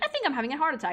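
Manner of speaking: relaxed, casual, offhand throwaway delivery. Retelling what dad said on the way to the hospital: imitating a casual tone.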